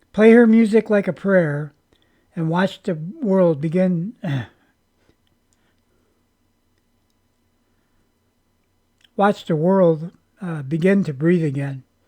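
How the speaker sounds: emotional, choked-up, swooping voice catching mid-line. Reading out a viewer's written message, getting choked up. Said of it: "I got a little choked up there".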